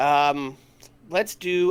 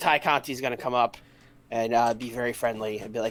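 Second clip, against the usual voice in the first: ordinary talk, nothing marked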